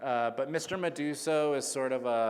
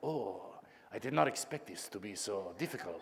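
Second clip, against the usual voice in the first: talking snake character voice; 3 semitones lower, 6 dB quieter than usual. Voicing the snake Fernando from the audiobook: Antonio Banderas voice. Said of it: "Fernando talks just like, um, uh, Antonio Banderas".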